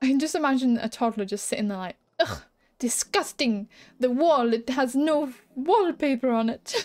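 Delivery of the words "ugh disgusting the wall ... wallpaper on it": very drawn-out, slow put-on French accent. Imagining what a toddler sitting there would say, in a French accent. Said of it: "I don't know why I did a French accent then".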